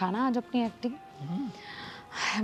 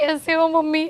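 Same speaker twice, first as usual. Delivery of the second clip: crying, much higher and louder; 6 semitones higher, 6 dB louder than usual. Greeting her mother, who asks why she arrives crying, crying. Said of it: "तू ऐसे रोते रोते क्यों आ रही है".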